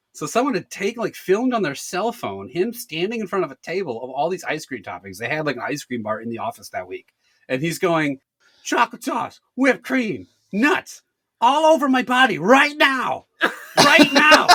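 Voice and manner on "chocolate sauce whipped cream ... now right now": yelled, higher pitch. Retelling a coworker's video at an ice cream bar: imitating someone yelling. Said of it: "He just kept yelling it".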